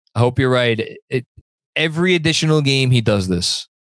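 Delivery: ordinary delivery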